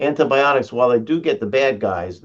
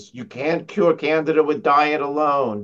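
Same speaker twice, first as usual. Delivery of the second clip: put-on confident, strong-voiced, firm, emphatic pronouncement; 3 semitones higher than usual. The speaker quotes a mentor's saying, imitating Marjorie Crandell's loud voice. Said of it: "in her loud, strong voice".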